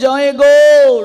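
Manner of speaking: loud, slow calling out from afar.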